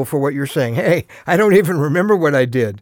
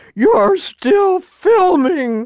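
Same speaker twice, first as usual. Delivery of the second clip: put-on very high, squeaky, frustrated twelve-year-old voice; 14 semitones higher, 3 dB louder than usual. Speaker retells his son's shout heard on a video, imitating a frustrated squeaky kid. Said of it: "his frustrated 12-year-old voice squeaking".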